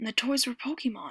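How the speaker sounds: plain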